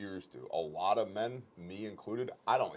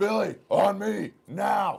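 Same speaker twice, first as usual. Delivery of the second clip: very loud, slow, high, booming, commanding delivery; 13 semitones higher, 11 dB louder than usual. Showing students how to call for help once gunfire starts: loud commanding voice from the diaphragm. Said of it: "use your big boy voice".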